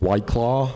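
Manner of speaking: loud, fake, put-on American accent. Asked to do an american accent, performing a short line: put-on american accent. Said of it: "Do an American accent right now".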